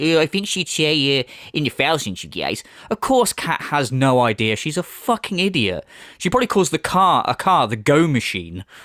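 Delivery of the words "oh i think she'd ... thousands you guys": ordinary talk, nothing marked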